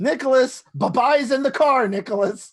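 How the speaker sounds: in-character scream. Running toward the vehicle in the game, calling to Nicholas: screaming in character. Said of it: "if the G M allows me to repeat it".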